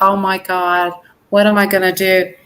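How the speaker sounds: normal talking voice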